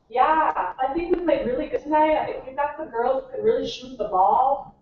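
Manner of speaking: put-on Minnesota-accented speech. Recalling own post-game interview clip, imitating own minnesota accent. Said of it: "I cannot believe I sound like that".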